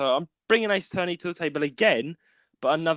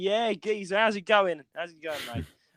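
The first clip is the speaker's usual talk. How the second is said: put-on matey, bantering London Cockney accent; 4 semitones higher than usual. Retelling a chat with Cockney friends who call each other geezer: Cockney accent. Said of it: "that Cockney connection".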